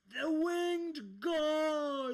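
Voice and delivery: very loud, shrill, high battle cry, "God" stretched. Voicing an enemy in a fight who cries out: shouting battle cry. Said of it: "you hear him shout".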